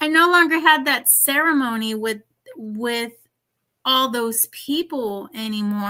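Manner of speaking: voice catching, choked-up, on the verge of tears. Telling another speaker about leaving a spiritual group: on the verge of tears. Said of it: "Oh my God, I'm gonna cry".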